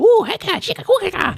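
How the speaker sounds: rapid, very high invented-language chatter. Showing how the creatures usually sound, in contrast: fast high-pitched made-up language. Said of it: "the fast, high pitch".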